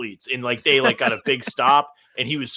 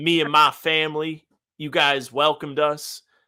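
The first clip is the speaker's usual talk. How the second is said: slow, sudden, put-on Southern drawl; 3 semitones higher than usual. Retelling a Massachusetts man's press-conference speech, mimicking his sudden Southern drawl. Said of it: "all of a sudden he has a Southern drawl".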